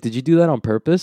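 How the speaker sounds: usual speaking voice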